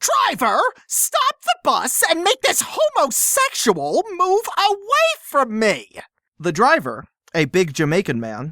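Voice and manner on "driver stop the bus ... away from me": put-on shrill, very high-pitched shout. Reading out a story, voicing a woman on the bus: imitating a woman shouting. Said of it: "She shouted".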